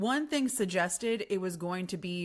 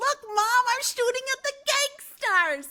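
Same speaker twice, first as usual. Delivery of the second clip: put-on very high, loud, eager, excited little boy voice; 7 dB louder than usual. Imagining a ten-year-old boy on the ride talking to his mom: imitating an excited ten-year-old kid. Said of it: "the little ten-year-old Tommy there, and he's like".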